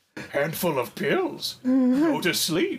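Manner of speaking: put-on swooping, lilting old Irish leprechaun voice. Doing the Yoda everyone has in their head, a failed Yoda impression. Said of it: "you just said it like a fucking, like, old, like, Irish, like, leprechaun".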